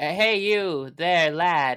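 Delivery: loud calling out. Shouting at a stranger walking in a field: shouting at someone. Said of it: "I'm gonna shout at him".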